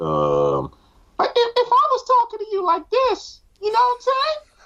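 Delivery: very high-pitched, swooping talking voice. Speaker shows how he talks in his high-pitched voice. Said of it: "my high pitched voice".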